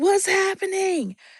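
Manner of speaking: high-pitched hollering.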